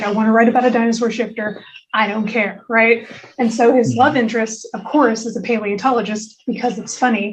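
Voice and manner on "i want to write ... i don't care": normal talking voice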